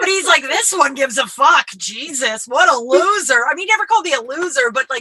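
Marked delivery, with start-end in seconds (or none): 0.4-3.5 slow, derisive, belittling, mocking scorn. Retelling how dad teased about being a bleeding heart liberal: imitating dad's mocking tone. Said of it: "the tone in his voice was, like, making fun of me".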